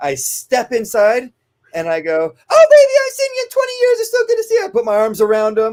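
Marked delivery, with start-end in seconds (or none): 2.1-4.6 very high, loud, kooky, doting, gushing aunt voice. Retelling a dog training drill, greeting the dog handler as the crazy aunt: imitating a crazy voice. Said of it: "I'm talking in this, like, kinda crazy voice".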